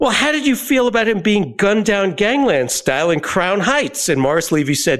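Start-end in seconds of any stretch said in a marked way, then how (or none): 0.0-4.1 acted, high, exasperated tone. Recounting questioning an interviewee, speaker retells his own past question, retelling an exasperated question. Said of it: "in exasperation".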